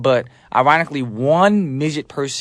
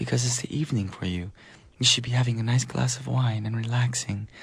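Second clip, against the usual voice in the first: very soothing, subtle, soft voice, quieter; 7 dB quieter than usual. Answering a listener's message about the evening: very soothing, subtle voice. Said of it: "speak with a very sooth-, soothing and subtle voice".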